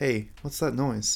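uneasy, anxious, worried tone. In a dark corridor, the speaker asks the caretaker about a noise: anxious tone. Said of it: "I asked the caretaker in an anxious tone".

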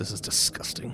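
with a grunt. Cad steps forward to kneel in the circle, grunting.

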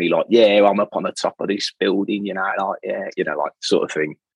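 poor, terrible put-on Cockney accent. Describing a blunt content creator, doing a bad Cockney Ryan Escuter impression. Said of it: "That wasn't a great accent".

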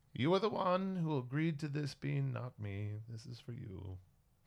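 put-on voice of an older woman. Retelling a scene, the speaker voices the ship talking to Bean: older female voice. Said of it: "you hear a like older female voice from the ship sort of say".

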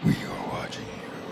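menacing, ominous, hushed, very quiet whisper. Retelling a psychic attack on a man, in an ominous voice. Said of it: "the ominous voice said".

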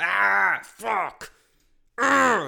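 loud, raw, rough, furious yell. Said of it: "way louder".

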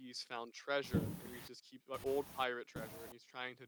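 ordinary delivery

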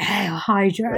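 sinister whispered put-on voice. Talking about a favourite movie scene, doing Garry Shandling's sinister whisper. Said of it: "that really sinister whisper".

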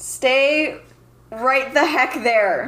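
light, mild half-yell. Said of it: "I'm gonna yell".

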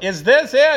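loud, high-pitched yelling.

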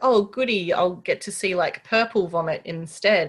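plain

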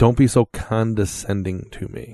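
slow, irritated, pissed-off, put-out character voice. Voicing an angry noble lady scolding a player: pissed-off character voice. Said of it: "she looks at you kinda pissed off and says".

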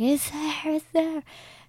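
full-on, high-pitched screaming. Retelling what she kept screaming during the scare; retelling a scream. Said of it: "she's still screaming like".

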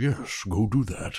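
strange comic character voice, weird, slow, drawn out. Recapping a game session, quoting Brainiac urging him on, in a weird Brainiac voice. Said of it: "And his weird Brainiac voice".

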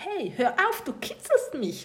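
giggling through it, very high and swooping. Narrating, voicing the listener being tickled by a blue squid, giggling. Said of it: "sagst du kichernd".

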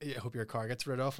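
plain

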